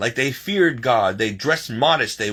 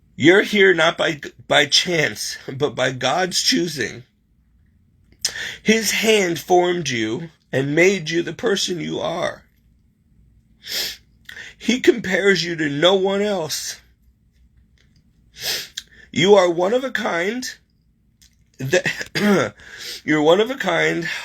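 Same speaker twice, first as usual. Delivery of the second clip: voice holding back tears, trying not to cry; 3 semitones higher than usual. Reading an inspirational message aloud to viewers, holding back tears. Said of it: "Sorry, guys, I'm trying not to".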